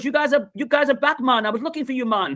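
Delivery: put-on Jamaican accent. Retelling what a man selling rum said to the group, jamaican accent. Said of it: "He goes again with the Jamaican accent".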